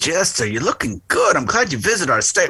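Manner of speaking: New York Italian accent. Imagining someone greeting jester to their state: italian new york accent. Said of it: "someone with that Italian New York accent coming to you and say".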